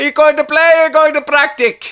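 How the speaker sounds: put-on very high, loud old Italian man voice. Retelling your exchange with a man you loved, imitating an old Italian guy. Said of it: "He's a wonderful old Italian guy".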